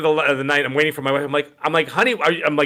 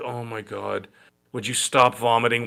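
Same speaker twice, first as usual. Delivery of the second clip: mock bored tone, lower and quieter; 5 semitones lower, 5 dB quieter than usual. Retelling the wife holding a vomiting girl's ponytail: imitating a bored wife. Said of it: "and she looked so bored".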